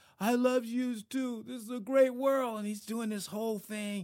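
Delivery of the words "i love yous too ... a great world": very loud, high, belted triumphant shout. Retelling the movie's winning moment, hand raised: Rocky impression. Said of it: "Don't judge me on my Rocky imp-, impersonation".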